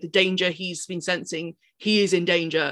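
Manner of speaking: usual speaking voice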